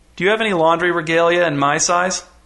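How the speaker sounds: usual speaking voice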